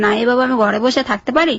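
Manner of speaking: ordinary talk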